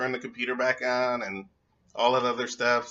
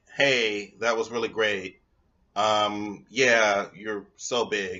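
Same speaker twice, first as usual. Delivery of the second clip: slow, unenthusiastic, half-hearted put-on tone; 3 semitones lower than usual. Acting out the line used to fake it after sex: fake praise without enthusiasm. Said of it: "kinda use a little bit more enthusiasm".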